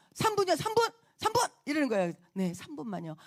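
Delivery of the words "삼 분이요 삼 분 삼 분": acted fed-up, impatient, irritated snap, very high. Retelling how the man being followed finally snapped at his pursuer, retelling an irritated snap. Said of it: "진짜 막 성질을 내면서".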